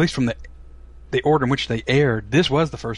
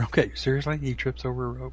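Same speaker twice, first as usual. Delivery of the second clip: usual speaking voice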